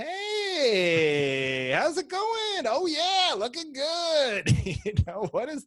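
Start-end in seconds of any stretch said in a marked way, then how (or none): 0.0-4.5 very slow, high, swooping put-on cartoon voice. Acting out how you talk to neighbors, in a weird cartoonish neighbor voice. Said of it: "it's like this weird cartoonish neighbor".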